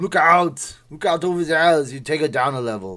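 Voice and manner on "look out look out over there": loud yell in a full Austrian accent. Showing how you can yell like someone famous, yelling like Arnold. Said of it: "you can yell like Arnold".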